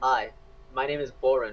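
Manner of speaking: soulless, lifeless, low, flat monotone. Introducing oneself to a stranger: flat, soulless monotone. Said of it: "in my monotone, soulless way".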